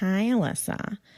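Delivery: acted, very snarky, snide and catty. Retelling how the ex's girlfriend greeted the speaker in a bar, mock-snarky greeting. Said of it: "she said in a very snarky voice".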